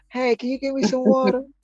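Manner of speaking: put-on sweet whispering voice. Teasing another speaker by imitating them: imitating a sweet whispering voice. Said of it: "you using that whispering them sweet nothing".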